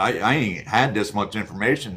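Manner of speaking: ordinary talk, nothing marked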